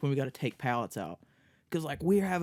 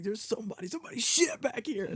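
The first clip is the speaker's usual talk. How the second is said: put-on scream, higher pitched; 9 semitones higher than usual. Retelling how the other speaker screamed to Kelsey: imitating someone screaming. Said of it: "you were fucking screaming back there to Kelsey".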